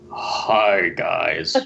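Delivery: very low, rough, creaky dropped voice. Standing in for Will, who is not recording this week, do a Will impression, voice dropped very low. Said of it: "drop my voice two octaves and I can be Will".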